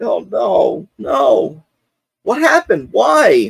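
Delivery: very high, drawn-out, slow weepy crying with sniffling sobs. Acting out how she reacted to the news, imitating crying and sniffling. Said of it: "she starts crying, like, um, you know, sniffling".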